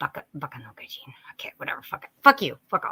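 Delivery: irritated, annoyed, breathy half-whisper muttering. The speaker's annoyance takes over while chatting with a co-host, annoyed. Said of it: "my my annoyance is taking over".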